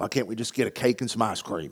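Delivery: put-on cranky, grumpy old man griping. Retelling own complaint while getting the yard ready in the heat: imitating a grumpy old man. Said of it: "I was being that grumpy old man".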